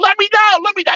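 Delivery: play-acted, very high crying voice. Retelling how a hung-up boy begged to be let down: imitating someone crying. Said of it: "He cried".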